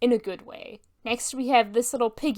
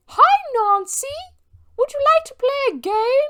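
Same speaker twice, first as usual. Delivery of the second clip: put-on very high, lopsided, wonky British child accent; 5 dB louder than usual. Mocking a demonic child, the speaker quotes her in a wonky British accent. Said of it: "her wonky British accent".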